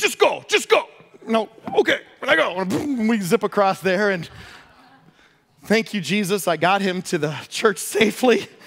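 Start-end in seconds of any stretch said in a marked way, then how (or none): 0.0-0.8 put-on high-pitched heavy German accent. Retell what Reinhard Bonnke told you while you hesitated, in Reinhard Bonnke's very strong German accent. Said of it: "his very strong German accent".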